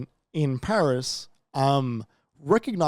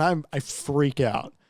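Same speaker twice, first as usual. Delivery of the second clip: ordinary talk, nothing marked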